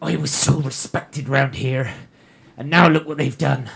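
mumbled grumbling under the breath. A game master voicing a shopkeeper, muttering under his breath. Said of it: "He is muttering away under his breath".

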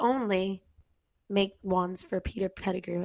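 put-on British accent. Asking a question during a group discussion, in a British accent. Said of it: "In a British accent".

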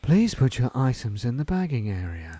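sultry, seductive pre-recorded automated announcer voice. Imitating the Co-op pre-recorded checkout lady: sultry Co-op checkout voice. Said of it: "you know who's got a sultry voice?".

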